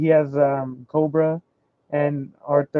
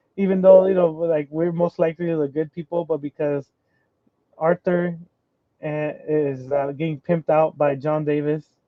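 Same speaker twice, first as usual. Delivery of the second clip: usual speaking voice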